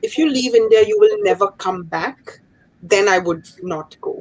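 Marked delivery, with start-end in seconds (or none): none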